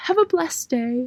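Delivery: failed Southern accent slipping into a British accent. Signing off to listeners as an old southern lady, botched southern accent. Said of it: "That sounded British".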